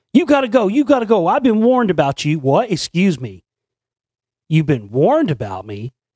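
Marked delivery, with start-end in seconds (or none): 0.2-2.4 shrieking, very high-pitched screaming. Retelling how a man at a park ordered the speaker to leave, imitating someone screaming. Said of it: "he just starts screaming".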